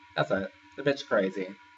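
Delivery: ordinary delivery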